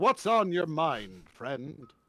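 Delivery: slow, stagey, theatrical put-on voice. Trying out a voice for a character, speaking to a first mate: stagey put-on character voice. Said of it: "I don't like that voice".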